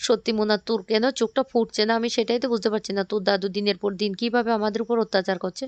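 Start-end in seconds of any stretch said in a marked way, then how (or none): none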